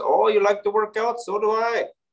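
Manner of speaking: strong exaggerated Indian accent. Speaker retells what a man from India said to him, Indian accent. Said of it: "very Indian accent".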